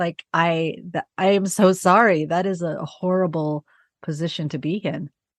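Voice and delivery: holding back tears while talking. A listener reacts to a single mother's story of hitting rock bottom, near tears. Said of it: "So I'm gonna cry".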